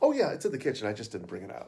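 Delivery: play-acted snarky, sarcastic tone with swooping pitch. Retelling a reply to a table asking about food: imitating own snarky retort. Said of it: "I was so snarky".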